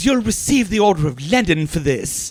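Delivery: put-on spoken with an English accent. Quoting the doctor's film line: Tim Curry impression. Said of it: "Tim Curry is the doctor, and he goes".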